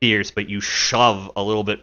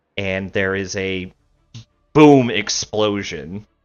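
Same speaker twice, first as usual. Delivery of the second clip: normal talking voice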